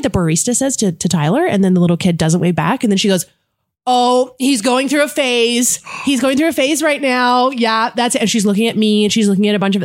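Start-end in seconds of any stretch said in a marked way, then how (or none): 3.9-8.2 mock, high, showy, attention-seeking announcing voice. Retelling the same mother explaining her toddler: imitating a loud talker. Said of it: "She's yelling it".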